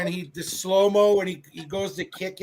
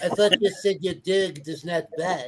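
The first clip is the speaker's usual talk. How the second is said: put-on bumbling French accent. Retelling a scene with a dog, doing an Inspector Clouseau voice. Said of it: "And then he goes".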